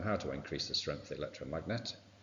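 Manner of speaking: quick, soft, rattled-off reading voice. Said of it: "if you're asked in the exam".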